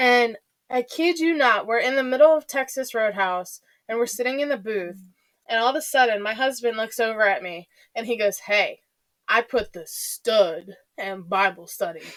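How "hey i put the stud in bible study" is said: deep, slow, drawn-out voice. Retelling a pickup line the husband said at dinner: imitating husband's deep voice. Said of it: "his deep voice".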